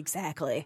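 whispering. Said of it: "I'm like".

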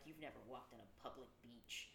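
muttered under the breath. Retelling what a man muttered about another man walking the beach: muttered under his breath. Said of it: "Keith is under his breath like".

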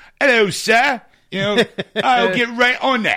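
loud, high-pitched fake Cockney accent, butler type. Describing a film butler played by a non-British actor: fake Cockney butler accent. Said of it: "they all put like a Cockney accent on".

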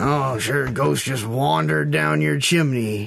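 mock judgmental monster hunter voice. Mocking how Geralt talks to clients: imitating judgy Geralt. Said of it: "being all Judgy McGee being all like".

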